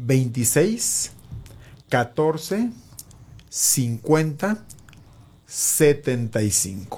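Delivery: very slow, spaced-out, word-by-word delivery. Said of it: "su número telefónico lo voy a decir, eh, despacito una vez".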